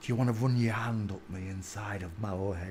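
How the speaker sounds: very low, very soft, hushed murmur. Retelling what a woman leaning in the car window said: quoting her low voice. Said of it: "she said in a low voice".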